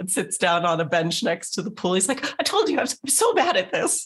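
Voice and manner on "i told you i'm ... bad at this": high, weepy wizard voice, still half crying. Voicing a wizard who fell into the pool: tearful wizard voice. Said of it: "cries a little".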